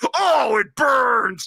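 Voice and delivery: put-on masculine man's voice, a bit high. Retelling a scene from the movie The Exorcist, imitating a man voice. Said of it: "he's got, like, a man voice".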